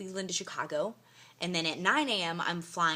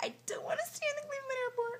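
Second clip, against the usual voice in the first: high, tearful, crying and upset voice. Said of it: "And I was like".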